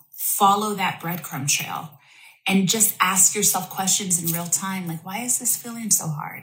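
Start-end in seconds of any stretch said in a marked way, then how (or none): 5.1-6.4 soft, gentle, curious inquiring tone. Modeling how to ask yourself questions in real time: gentle, curious tone. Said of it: "But do it with that tone that I just did".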